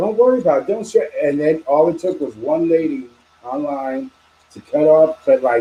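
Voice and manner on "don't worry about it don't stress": full, high-pitched yell. Retelling a moment at a New Jersey Walmart: imitating Jenny yelling. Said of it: "she was yelling at me".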